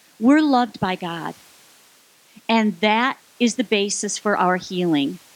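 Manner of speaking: very slow, clear enunciation, each word spelled out. Repeating a quote from the handout papers: very slow and clear. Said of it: "speak this very slowly and clearly".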